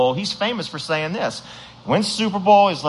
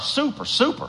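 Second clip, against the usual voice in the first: super strongly stressed, leaned on hard; 8 semitones higher than usual. Speaker introduces a superstar quarterback to the audience: stress on super. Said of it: "Heavy emphasis on super".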